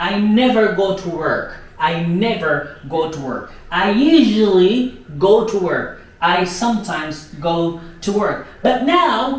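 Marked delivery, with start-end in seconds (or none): none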